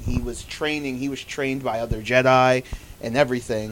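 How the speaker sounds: ordinary talk, nothing marked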